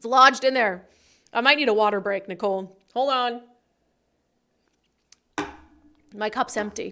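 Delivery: choked voice as if something stuck in throat. Asking for a water break, speaking with something stuck in throat. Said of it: "I have something in my throat".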